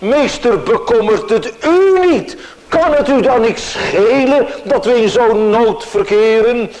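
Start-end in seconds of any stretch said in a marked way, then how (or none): 0.0-2.4 heavy emphasis landing on the word "u". Repeating a quoted question to the Master, stress on the word u. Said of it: "Met nadruk op het woordje u".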